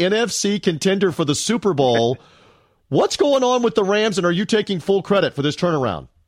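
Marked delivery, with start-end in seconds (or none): 0.0-2.2 stifling a laugh, slower. Speaker asking another about the Rams' turnaround, holding back a laugh. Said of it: "I can't say it with a straight voice".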